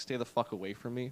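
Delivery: put-on angry reaction. Retelling his reaction to a stranger's smile: imitating an angry reaction. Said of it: "I got pissed off".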